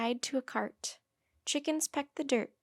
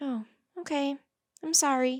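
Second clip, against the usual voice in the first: small, little, hushed, quiet voice; 2 semitones higher, 4 dB louder than usual. Annie answers Leonardo after he tells her and Jack to go, in a small voice. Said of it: "said Annie in a small voice".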